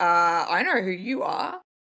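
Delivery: mock contemptuous, disgusted, dismissive tone. Retelling meeting a guy at a party: imitating disgusted tone. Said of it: "disgusted look on my face".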